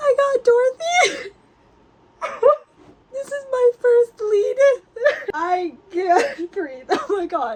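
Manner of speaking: ugly crying. Learning from a director's message about getting the first lead, ugly crying. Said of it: "I am such a not pretty crier".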